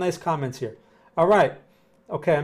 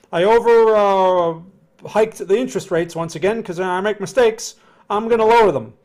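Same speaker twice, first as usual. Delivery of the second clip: high, loud, sheepish mock announcement voice. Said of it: "and Powell comes down".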